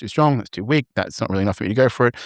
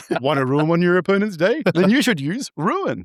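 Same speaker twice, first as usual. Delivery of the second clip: put-on excited sing-song voice, high and swooping; 9 semitones higher than usual. Delivering a promo line about ruining an opponent's day, Tidbit voice, acting excited. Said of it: "I'm just acting all excited".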